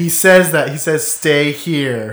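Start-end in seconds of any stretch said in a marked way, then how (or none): 1.1-2.1 super condescending, patronizing, slow delivery. Retelling a movie character's line to the others: imitating a condescending order. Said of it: "Super condescending".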